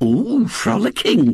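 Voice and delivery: airy, breathy exclamation. Mrs. Bott repeats a word from the young man's account, breathed. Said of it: "breathed Mrs. Bott".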